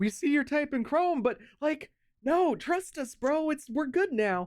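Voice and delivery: shrill, very high, loud pleading. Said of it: "it's begging".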